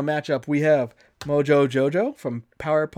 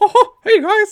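put-on cartoon mouse voice, much higher, louder, slower; 10 dB louder than usual. Showing how the character always sounded before imagining a change, in a Mickey Mouse voice. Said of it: "changed the way Mickey Mouse sounded".

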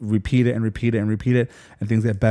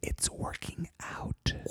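very quiet, hushed, barely voiced whisper. Sharing news the speaker doesn't want said out loud, whispered. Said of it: "so I'll whisper it".

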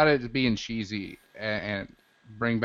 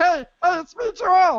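very high-pitched, very slow, drawn-out delivery; 8 dB louder than usual. Imitating Joel suddenly announcing himself: imitating Joel. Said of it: "all of a sudden we'll hear".

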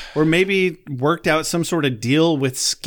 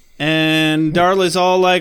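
ordinary talk

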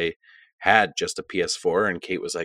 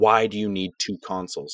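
mock-angry, acted-out angry voice. Retelling how she reacted to his new Xbox, retelling someone getting mad. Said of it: "Kate got mad and was like".

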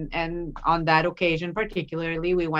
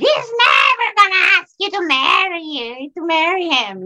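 very high, shrill, annoying, grating shrieky voice; 12 semitones higher, 9 dB louder than usual. Retelling what he said in front of the crowd and family, imitating a shrieky voice. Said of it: "was like in that shrieky voice very annoying".

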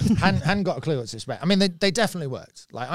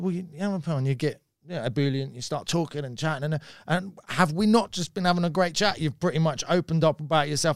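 ordinary talk

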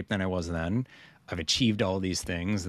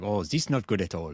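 put-on French-accented voice. Speaker imitates a Swiss man who never calls things bad, French accent. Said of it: "he's a Swiss with a French accent".

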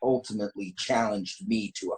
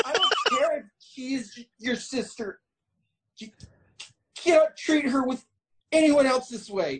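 timid, high, stuttering yell with stern tone. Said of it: "you have a stutter".

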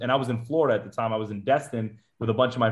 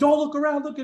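barked, very high-pitched yell; 3 dB louder than usual. Speaker recalls being yelled at the whole time while signing papers; imitating people yelling orders. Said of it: "they're just yelling at us the whole time".

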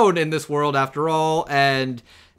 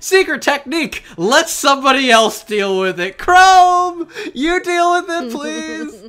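whiny put-on cowardly voice, higher and louder; 13 semitones higher, 6 dB louder than usual. Acting out Ginro fleeing trouble as things get troublesome: whiny cowardly Ginro voice. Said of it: "very easily jealous and whiny and cowardly".

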